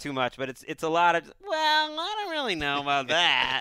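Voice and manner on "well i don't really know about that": teasing, high, swooping parody voice. Showing how a colleague imitates the speaker, imitating Damashek's impression. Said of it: "Damashek's impression of me".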